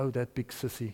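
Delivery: very soft, small, shaky little voice. Retelling a boy speaking up after a long silence: imitating a shaky little voice. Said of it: "the shaky little voice came up".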